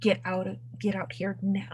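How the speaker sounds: urgent, pressing, low, hushed whisper. Whispering in character to two companions, telling them to get out: whispering urgently. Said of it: "I whisper then to Cass and Kuvid".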